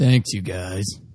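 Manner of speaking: voice like a heavy smoker's. Thanking the show's listeners for their reviews, in a heavy smoker voice. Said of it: "that was a really interesting voice".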